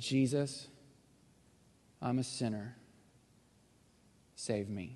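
slow, hushed, under-the-breath half-whisper. Retelling a prayer said on the back row, eyes shut tight: retelling a half-whispered prayer. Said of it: "Just whispered it under my breath".

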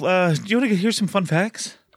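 breathless voice. A show host offering fun facts to the others, out of breath. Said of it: "I'm out of breath".

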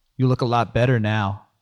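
ordinary delivery, nothing marked

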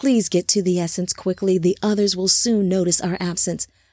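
ordinary delivery

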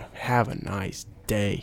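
belittling, derogatory, dismissive tone. Showing how the phrase can be said another way: derogatory tone. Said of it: "you can say it in a derogatory way".

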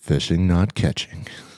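cool, showy announcer-style intro voice. Performing the podcast name after being asked for a cool voice: cool podcast intro voice. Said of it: "Let me hear you say it".

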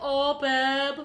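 put-on high, thick, heavily laid-on Manchester accent. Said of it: "Manchester accent".

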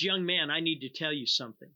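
loud calling-out male voice. Retelling how a man in a restaurant turned and addressed him, speaker is retelling a loud call-out. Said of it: "turns around in a loud voice".

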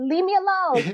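very high, small, squeaky little voice. Imagining what Mike Tyson would say: little Mike Tyson voice. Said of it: "only in that little voice".

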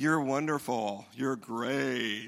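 mocking, sarcastic tone, slow delivery. Showing how tone can spoil nice words: sarcastic tone. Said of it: "That was sarcastic".

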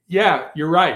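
sarcastic voice. Retelling own reply to people who say they never could: imitating own sarcastic reply. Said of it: "sometimes I can be a little sarcastic".

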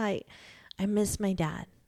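put-on pitiful voice. Retelling what she said while snuggling up in bed, imitating a sad, pathetic voice. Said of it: "in that sad, pathetic voice".

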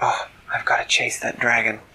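plain

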